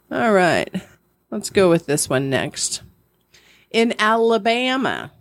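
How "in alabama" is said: stretched owl-like hoot at the start of Alabama. Reading a quiz question aloud: saying it like Forrest Gump. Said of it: "trying to say it like Forrest Gump does".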